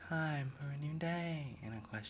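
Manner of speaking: very quiet, half-swallowed, barely voiced words. Reacting to a show, imitating how Celestia sounded: Celestia's weird voice. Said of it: "she had a weird voice, but she was like".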